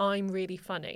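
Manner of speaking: ordinary delivery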